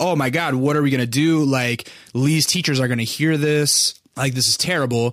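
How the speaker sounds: mock complete panic, frantic and fretting. Retelling parents' reaction after the recording was stopped: imitating parents in a panic. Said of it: "a complete fucking panic".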